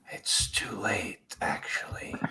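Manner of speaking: unholy rasping voice. Voicing the reply to a sent message: unholy raspy voice. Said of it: "you get back an unholy, raspy voice".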